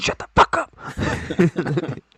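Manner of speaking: very slow, whispered yell. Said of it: "Just whispering, whisper yelling".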